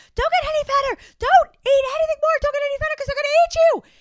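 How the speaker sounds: very loud, very high, one-note, frantic pleading yell. Describing a scene where she yells at her parents, retelling frantic yelling. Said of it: "She's yelling at her parents".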